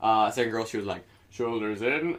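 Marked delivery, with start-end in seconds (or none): 1.3-2.2 imitated fussy character voice. Retelling a trailer line, quoting a fussy character: put-on voice quoting a trailer character. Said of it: "why did I do that voice?".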